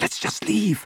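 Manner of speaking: soft, breathy, barely voiced whisper. Hiding in the dark from searching Death Eaters, Hermione speaks to Harry and Ron; whispered. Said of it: "Hermione whispered".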